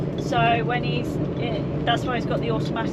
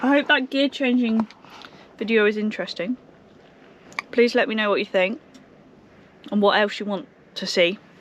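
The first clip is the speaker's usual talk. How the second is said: talking while chewing, mouth full. Ending a video from a lay-by, the driver talks to viewers with mouth full. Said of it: "I'm just eating a giant strawberry".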